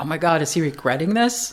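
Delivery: ordinary delivery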